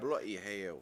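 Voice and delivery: put-on, attempted Australian accent. Saying a swear as a joke in a put-on Australian accent. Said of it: "my red eye accent".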